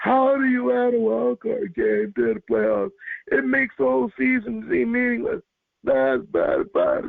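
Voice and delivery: very high, swooping whining voice. Complaining to the other speaker about the playoff wild card game, whiny voice. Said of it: "That was my whiny voice".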